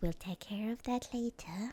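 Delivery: put-on very slow, dawdling, drawn-out old woman's voice. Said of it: "she's got the [name] voice, sort of old lady".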